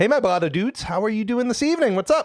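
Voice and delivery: rushed, rising, very high, fast excited voice. Greeting the Blotto dudes, about to present them with something: excited. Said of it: "I know I sound excited".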